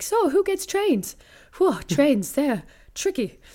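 put-on high, swooping, bouncy small-boy voice. A performer demonstrates their stand-up character, a seven-year-old boy: Andrew, small boy voice. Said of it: "he'd speak like this".

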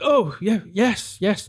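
flustered, caught off guard, high and drawn out. Retelling how a comic stared at the sky: imitating a flustered man. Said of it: "Just completely flustered".

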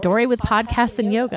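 ordinary talk, nothing marked

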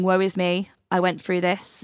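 plain

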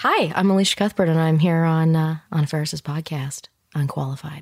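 sexy, sultry tone. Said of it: "your sexiest intro".

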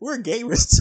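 very high infomercial pitchman voice, selling hard. Quoting what a man said about being gamers too, in a put-on infomercial voice. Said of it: "With that infomercial voice".

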